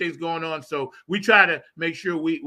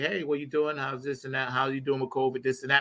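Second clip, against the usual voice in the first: put-on elegant regal voice, lower and quieter; 3 semitones lower, 7 dB quieter than usual. Retelling a phone call from Patty: imitating Patty, elegant and regal. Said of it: "how Patty is always so, um, elegant and regal".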